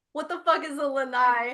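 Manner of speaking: slow delivery, laughing through the words. Reading out a chat question while laughing while talking. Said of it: "I'm laughing because".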